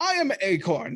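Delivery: talking squirrel character voice. Voicing a talking squirrel who greets the players: talking squirrel voice. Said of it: "you see a squirrel talking".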